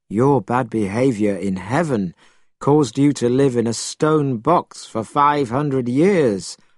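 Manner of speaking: plain reading voice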